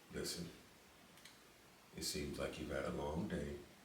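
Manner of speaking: put-on seductive voice, breathy and whispered. Quoting a man's reply to her, in a put-on sexy voice. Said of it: "let me put on my sexy voice".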